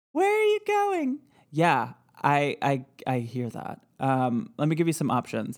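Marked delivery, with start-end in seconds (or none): 0.2-1.2 very high, tiny little ghost voice. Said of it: "It is like a real tiny little voice".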